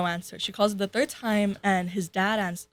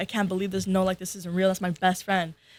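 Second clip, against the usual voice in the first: put-on crying with bawling sobs. Retelling their mom's reaction to a prank call: imitating mom crying. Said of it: "bawling her eyes out".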